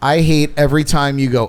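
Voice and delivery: plain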